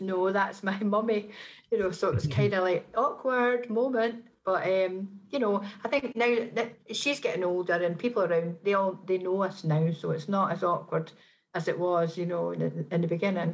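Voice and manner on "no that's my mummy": plain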